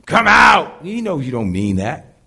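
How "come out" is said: high, loud fake authoritative growl, barked out. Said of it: "You got a growl in your voice".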